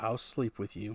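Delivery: soft, hushed half-whisper, very close. Voicing a character on tiptoe, speaking into someone's ear: half-whispering in someone's ear. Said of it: "up on her tippy toes whispers in your ear".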